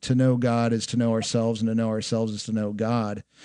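plain

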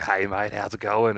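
played-up Australian accent. Showing how you lean into it on holidays: played-up aussie accent. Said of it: "you lean into your Aussie accent".

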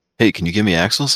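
ordinary talk

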